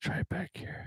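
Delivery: half-whispered, very quiet, barely voiced. Testing a microphone with another speaker: talking low. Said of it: "why do you need to talk that low?".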